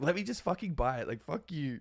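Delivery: mouthy, defiant, brash, sassy attitude. Retelling own reaction to spending advice: imitating own sassy self. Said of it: "I get so sassy".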